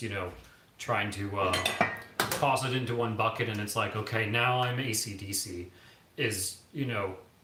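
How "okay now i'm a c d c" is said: ordinary talk, nothing marked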